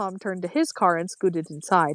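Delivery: ordinary delivery, nothing marked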